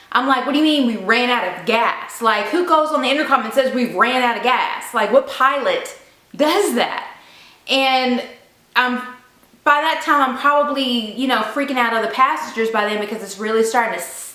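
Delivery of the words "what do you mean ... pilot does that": normal talking voice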